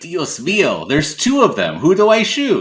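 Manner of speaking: very high shout that swoops and keeps climbing. Describing a nameless side character they love, imitating a character who always yells. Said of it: "always yelling".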